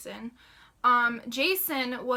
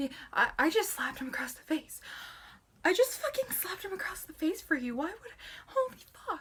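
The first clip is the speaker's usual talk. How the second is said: mock rattled, still-shaking, high, stunned disbelief; 6 semitones higher, 5 dB quieter than usual. Retelling walking out after slapping someone: imitating own shaken shocked voice.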